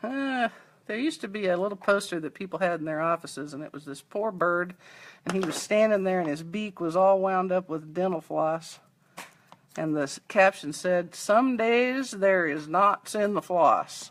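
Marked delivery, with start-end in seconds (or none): 11.1-14.1 slow, drawling, put-on Southern US accent. Reading a remembered poster caption aloud: imitating a southern accent. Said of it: "it was with a southern accent".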